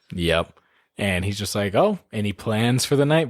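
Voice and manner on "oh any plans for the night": flat, level, expressionless, menacing deadpan monotone. Describing Jesse Plemons's cop character in a movie, quoting him: menacing Jesse Plemons impression.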